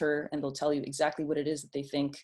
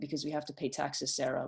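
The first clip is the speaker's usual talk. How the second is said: soft, totally deadpan, bone-dry, matter-of-fact tone; 7 dB quieter than usual. Quoting an eight-year-old answering sarah without skipping a beat, retelling a kid's deadpan reply. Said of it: "totally deadpan".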